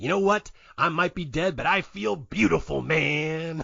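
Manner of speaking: lazy, slow drawl, lingering on man. Retelling a movie scene: a Jack Nicholson impression. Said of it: "this inexplicable Jack Nicholson impression".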